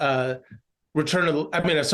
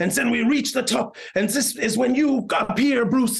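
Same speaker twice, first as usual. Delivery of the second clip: put-on mangled French accent, higher voice; 8 semitones higher than usual. Recounting the director describing a shot to Bruce, in a butchered Christoph Gans French accent. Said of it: "I might do a French accent and butcher it".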